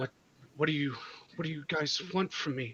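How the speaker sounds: fast, high, terrified stammering, tripping over words. Game master voices a terrified woman the players step in front of; terrified, panicked. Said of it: "So you have just stepped in front of you have just stepped in front of her as she's still terrified, / you come upon a woman who was doing something at a tree. / Who who are you? Why why why are you h".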